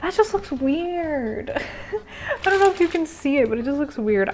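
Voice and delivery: amused, laughing through the words. Speaker putting on blush reacts to the result, laughing.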